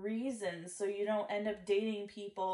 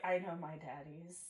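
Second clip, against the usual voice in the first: put-on soft, dry, flat, expressionless deadpan; 3 semitones lower, 8 dB quieter than usual. Speaker recounts answering a woman's question, retelling own deadpan reply. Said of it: "I was like deadpan in the face".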